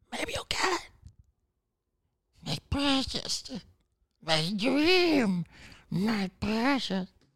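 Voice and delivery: slow, drawn-out put-on creature voice. Describing chasing a dream, speaker does a Smeagol voice. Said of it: "That's my Smeagol impression".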